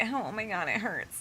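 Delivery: put-on slow, drawn-out, babyish crybaby whine. Retelling own complaints about a hangnail: imitating own babyish whining. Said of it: "I've been a biggest baby about it".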